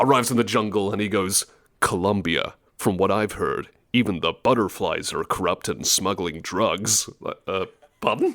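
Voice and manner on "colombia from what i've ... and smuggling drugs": low, level noir-style narrator voice. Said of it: "noir style narrations for when you start levels".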